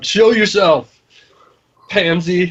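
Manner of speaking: challenging, called-out tone in a character voice. Answering an evil voice in a temple in character: in-character shout. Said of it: "I shall s-, shout".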